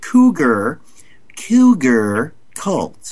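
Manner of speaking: very slow, careful, clear enunciation.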